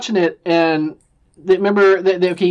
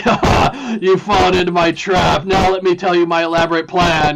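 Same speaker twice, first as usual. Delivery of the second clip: put-on gloating villain voice. Mocking a film's explanation scene as a James Bond villain's gloating speech. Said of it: "a James Bond villain giving their big speech".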